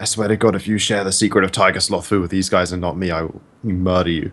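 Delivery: exaggerated dramatic whisper. Retelling what you said over to someone as it came down the stairs, in a stage whisper. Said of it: "a stage whisper so Piper can hear me".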